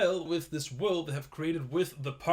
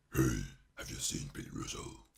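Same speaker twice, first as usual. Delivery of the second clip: hushed, breathy, growly half-whisper; 6 dB quieter than usual. The speaker demonstrates how a character talks: growling voice. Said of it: "when I'm doing some growling".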